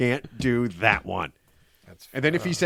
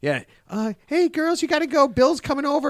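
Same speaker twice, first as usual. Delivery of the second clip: put-on very high-pitched, girlish young woman's voice; 13 semitones higher than usual. Acting out the twenty-four-year-old girlfriend sending the girls away: imitating a young girlfriend. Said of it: "when she's like".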